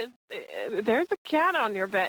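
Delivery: ordinary delivery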